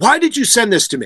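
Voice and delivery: acted, high-pitched yelling. Speaker retells the manager's phone call after the fax, retelling a yell. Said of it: "basically yelling at me".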